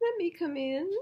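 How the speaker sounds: put-on very high, squeaky, teeny tiny mouse voice. Narrator reading a story, the little mouse asks the animals in a teeny tiny voice. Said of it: "said the little mouse in a teeny tiny voice".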